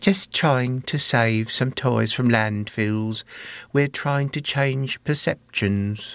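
British English accent throughout. A woman from a toy company explains its aims: english accent. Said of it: "here's Liebling with an English accent this time".

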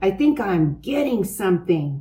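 plain reading voice

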